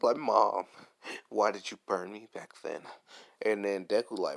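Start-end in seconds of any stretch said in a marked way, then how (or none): 0.2-2.8 put-on tearful voice. Retelling an anime scene, Todoroki sad and near tears: imitating Todoroki about to cry. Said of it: "he's about to cry".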